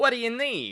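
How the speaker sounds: smug, very high-pitched character voice. Voicing a man slumped in his office chair with a cigar: smirking character line. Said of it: "and smirks".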